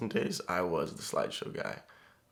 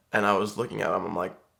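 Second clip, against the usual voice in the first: normal talking voice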